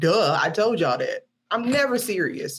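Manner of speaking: ordinary talk, nothing marked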